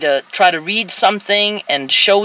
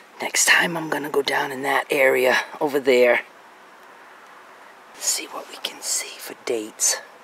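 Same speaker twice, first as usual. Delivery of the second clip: soft, hushed whisper under the breath; 5 semitones lower, 7 dB quieter than usual. Filming among old stones, planning where to look next: whispering. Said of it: "Why am I whispering?".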